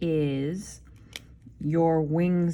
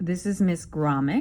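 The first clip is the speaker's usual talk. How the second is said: ordinary talk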